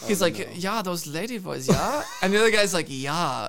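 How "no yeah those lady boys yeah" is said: put-on heavy, thick German accent throughout, laid on. Retelling what a man said in a conversation they overheard, thick german accent. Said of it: "with thick German accents".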